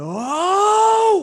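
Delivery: very high, very loud, shrill, drawn-out swooping scream. Narrating a game character seeing lightning hit his love, character screaming. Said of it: "and it just screams".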